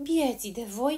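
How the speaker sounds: sympathetic, pitying exclamation. Mrs. Bibb, the visitor, hears what happened and exclaims to the others: exclaiming. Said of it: "exclamă ea de mai multe ori".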